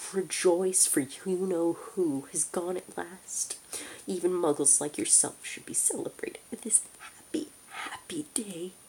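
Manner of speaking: squeaky little voice. A narrator reads a character's line to a muggle: squeaky voice. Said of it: "he said in a squeaky voice".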